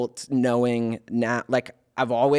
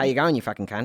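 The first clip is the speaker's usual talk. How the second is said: put-on Australian accent. After asking to hear an australian accent, the speaker tries a put-on australian accent. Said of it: "That's the real one".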